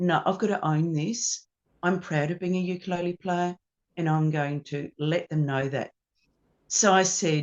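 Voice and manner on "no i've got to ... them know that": normal talking voice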